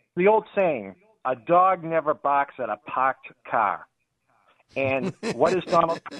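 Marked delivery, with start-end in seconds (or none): 1.3-3.9 unhurried, slow New England accent. Quoting an old saying to the crowd, in a New England accent. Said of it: "Would you say that again for people".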